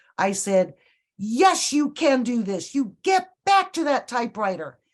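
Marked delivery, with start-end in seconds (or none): 1.2-4.7 acted, high, bossy yell without hesitation. Retell how you answered a man who said he's not an actor, retelling a yell. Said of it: "I yelled at him".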